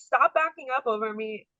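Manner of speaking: held-back, mild, frantic yell. Retelling getting out of the car as a trailer backs over it: imitating own screaming. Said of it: "and I'm screaming. I'm like".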